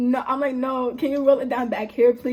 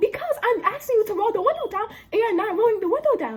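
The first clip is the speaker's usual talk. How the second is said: very high-pitched heated ranting; 9 semitones higher than usual. Retelling an argument with a man who won't roll his window down, re-enacting her yell. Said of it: "why are you yelling?".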